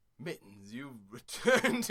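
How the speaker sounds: swooping, storybook-style narrator voice. Voicing the captain greeting mittens as mittens moves in, narrator's voice. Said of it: "in the narrator's voice".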